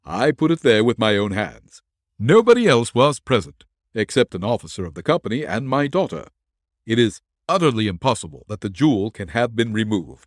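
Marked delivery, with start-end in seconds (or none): none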